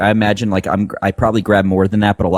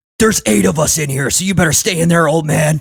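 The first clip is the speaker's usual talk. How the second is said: yelled high and raised; 9 semitones higher than usual. A player's character yells back at an old man while running out of the shop: yelling. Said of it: "I yell".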